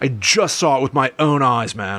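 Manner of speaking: put-on California dude accent and voice. Imitating a show host telling what he saw: imitating a california accent. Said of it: "very, like, West Coast about it".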